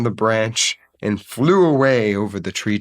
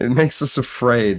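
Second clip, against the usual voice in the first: plain reading voice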